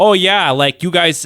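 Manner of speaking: put-on high upper Midwest accent. Recalling being the weird kid who showed up talking in a weird northern accent. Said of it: "I had a really weird northern accent".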